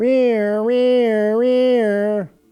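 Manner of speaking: bad put-on imitation of an ambulance siren. Opening with a bad ambulance siren impression. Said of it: "that's my bad ambulance impression".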